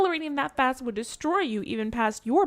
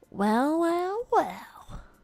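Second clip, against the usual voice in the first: put-on creepy doll voice, higher; 4 semitones higher than usual. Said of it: "maybe she talks like Chucky".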